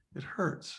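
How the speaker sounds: very soft whisper, almost giving in. Retelling what a woman said after a long pause: imitating a very soft, surrendering voice. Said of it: "in this very soft, almost surrendering way".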